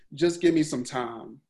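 ordinary talk

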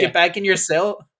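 ordinary talk

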